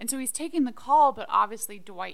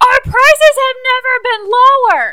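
high-pitched, shrill, very loud all-out holler; 19 dB louder than usual. Retelling a scene where Jim flusters Dwight, retelling a yell. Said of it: "Dwight is yelling".

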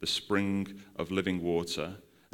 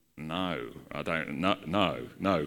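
put-on, very slow, hesitant and reluctant delivery; 3 semitones lower than usual. Retelling how the year group answered the teacher: imitating a reticent no. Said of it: "reticently went".

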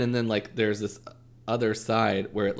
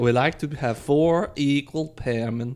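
put-on Swedish accent; 3 semitones higher than usual. Podcast co-hosts joking around, one speaking in a put-on Swedish accent. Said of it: "do Trixie's Swedish accent".

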